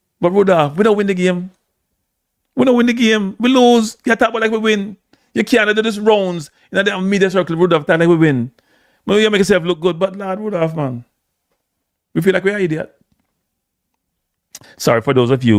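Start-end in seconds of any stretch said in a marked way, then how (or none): 0.2-13.0 high, heated Jamaican Patois rant. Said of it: "who may not understand Patois".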